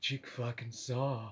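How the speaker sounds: very hushed voice, swallowing a laugh. Retelling how she said his name, retelling a suppressed laugh. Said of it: "like she was trying not to laugh".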